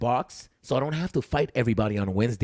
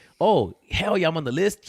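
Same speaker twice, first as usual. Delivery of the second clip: mock enthusiasm, high-pitched, dripping with sarcasm; 6 semitones higher, 4 dB louder than usual. Speaker recounts a loving back-and-forth, retelling a sarcastic remark. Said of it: "I sarcastically say".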